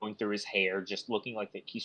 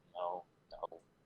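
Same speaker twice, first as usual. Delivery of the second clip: muttering under breath, much quieter; 2 semitones lower, 6 dB quieter than usual. Oberon paces in his tent, muttering under his breath. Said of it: "practically like muttering under his breath".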